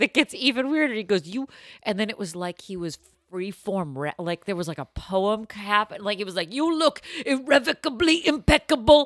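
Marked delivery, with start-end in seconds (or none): 6.5-9.1 very high, intense, leaning-in delivery. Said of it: "like when [name] gets really intense".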